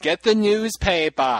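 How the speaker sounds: put-on strong New England accent. Quoting a favorite film line: Kevin Costner accent. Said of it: "Kevin Costner from Thirteen Days".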